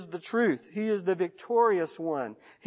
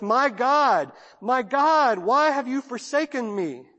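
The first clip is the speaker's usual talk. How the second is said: mock agonized cry, much slower pace; 5 semitones higher, 3 dB louder than usual. Retelling the words of a man dying a painful death, acting out an agonized cry. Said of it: "you can hear it in the agony of his voice".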